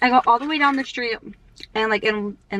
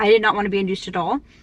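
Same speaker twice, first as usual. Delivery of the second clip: plain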